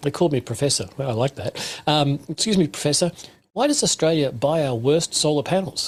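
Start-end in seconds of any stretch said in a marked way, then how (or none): 2.3-5.9 courteous, polite, almost confused tone. Retelling an engineer's question in a break: imitating a polite, confused voice. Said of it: "in a rather polite and almost confused voice".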